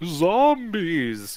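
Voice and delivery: eerie, spooky voice. Answering Kim's nervous question about a strange noise, in a spooky voice. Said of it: "you reply in a spooky voice".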